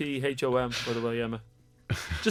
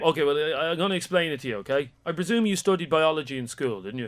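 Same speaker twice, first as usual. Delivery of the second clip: ordinary talk, nothing marked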